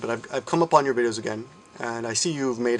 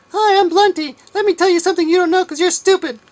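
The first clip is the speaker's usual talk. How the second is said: very high, shrill, loud, snide mocking toy voice; 10 dB louder than usual. Acting out a pretend toy conversation mocking the addressee: mocking imitation of Blunty. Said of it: "have them do a conversation".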